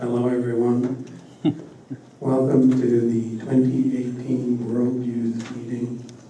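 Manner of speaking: flat, level monotone with weak breath. Showing how to speak english like japanese, opening a speech: flat monotone, weak breath.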